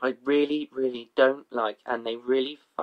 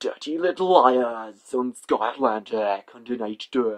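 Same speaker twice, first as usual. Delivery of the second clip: put-on TV announcer voice. Imitating the Sky channel voiceover announcer: Sky voiceover announcer voice. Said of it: "like the guy who does the Sky".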